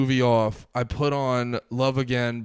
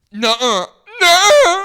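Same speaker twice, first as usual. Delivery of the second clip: put-on shrill, swooping, very high, very loud girly no; 13 dB louder than usual. Retelling his proposal, a man imitates her girly refusal. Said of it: "She does the girl shit where she's like".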